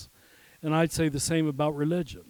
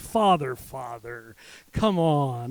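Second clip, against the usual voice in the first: imitated patronizing, condescending tone; 3 semitones lower than usual. Retelling what a man at the podium said during the break, mimicking a patronizing tone. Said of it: "in a most patronizing way".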